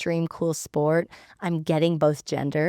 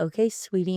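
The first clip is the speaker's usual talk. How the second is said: plain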